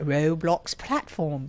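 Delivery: put-on British accent. Saying the same phrase again, now in a british accent. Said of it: "Now I'm going to do it with the British accent".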